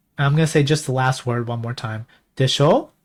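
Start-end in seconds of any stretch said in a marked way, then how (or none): 2.4-2.8 でしょ with pitch lifting upward at the end. Japanese lesson, repeating the sentence's last word: rising pitch on でしょ. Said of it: "Rising voice".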